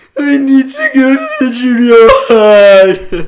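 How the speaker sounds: acted, teary, out-of-control pleading, very high, very loud. Retelling asking for help at a counter: imitating own scared crying voice. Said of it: "it sounded like I was crying".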